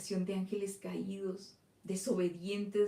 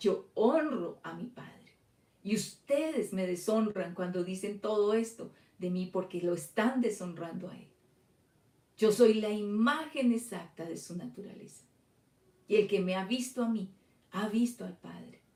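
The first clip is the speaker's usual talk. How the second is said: put-on vigorous, strong-voiced, energetic, forceful delivery; 5 dB louder than usual. Reading a scripture quote aloud as it should sound: acting out an energetic voice. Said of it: "Él debió decirles con una voz enérgica".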